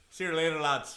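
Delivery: put-on Irish-accented speech.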